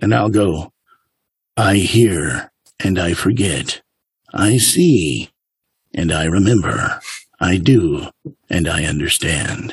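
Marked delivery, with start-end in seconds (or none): 1.6-9.7 put-on deep, slow old movie-trailer narrator voice. Demonstrating a narration voice from old movie trailers: In a World movie-trailer voice. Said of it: "the In a World voice that I do from like the old movie trailers".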